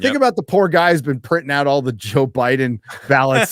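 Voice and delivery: ordinary talk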